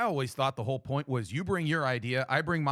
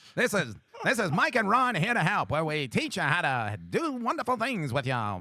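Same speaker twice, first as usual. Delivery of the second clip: swooping nineteen-thirties radio announcer voice; 5 semitones higher than usual. Introducing a two-host show in a 1930s radio announcer voice. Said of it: "I'm gonna talk like a radio voice from the nineteen thirties".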